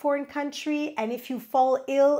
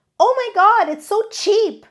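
high, loud excited yell. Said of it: "don't yell out things like".

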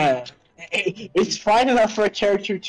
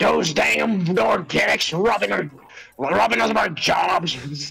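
put-on hillbilly accent, slower. Riffing on a co-host's remark about robots, hillbilly Necron with a southern accent. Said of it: "like a southern accent, like hillbilly fucking Necron".

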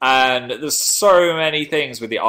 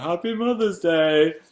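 put-on high, slow proud child voice. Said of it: "And I was like".

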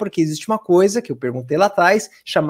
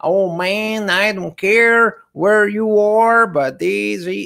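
thick, broad, slow, heavy Texan twang. Showing how people in Texas speak English, in a heavy Texan accent. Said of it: "com um sotaque mais texano".

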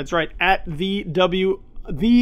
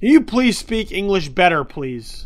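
plain

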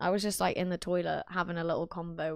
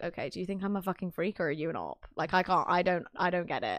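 ordinary talk

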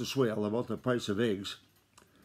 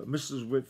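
ordinary delivery, nothing marked

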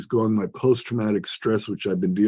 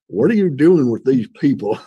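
put-on, loud north Georgia accent; 4 semitones higher, 5 dB louder than usual. Retelling what a man in northern Georgia asked him, imitating the man's accent. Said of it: "I'm going to imitate his accent".

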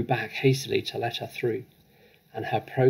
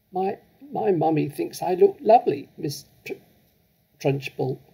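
put-on high, trembling, halting, stuttering child voice; 6 semitones higher than usual. A child answers a woman who has just shouted at her: stuttering and shaking. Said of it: "Amanda stuttered, shaking like a blancmange".

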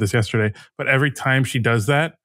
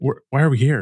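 put-on whispering voice. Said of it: "And I'll just whisper in her ear".

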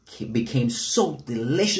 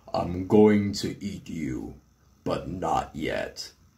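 big, dark, deep storybook monster voice; 6 semitones lower than usual. Narrator reading the Ickabog's reply to Bert, deep, booming Ickabog voice. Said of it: "In its deep, booming voice".

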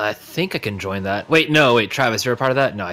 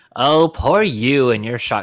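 shaky, put-on rogue character voice; 3 semitones higher, 4 dB louder than usual. A player tries out a voice for a rogue: rogue character voice. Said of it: "that's not going to be a good rogue voice either".

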